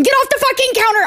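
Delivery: mock very high-pitched, loud, shrill screaming. Retelling what gets screamed at the cat: screaming at the cat. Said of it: "I find myself screaming on regular occasion".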